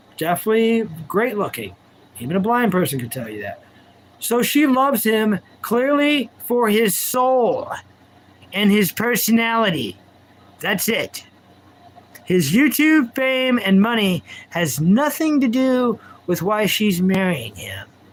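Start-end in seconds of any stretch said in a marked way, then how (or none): 4.2-17.9 heavy, thick, dripping sarcasm. Mocking the reasons a woman is marrying a YouTuber: heavy sarcasm. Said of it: "Bring in the sarcasm".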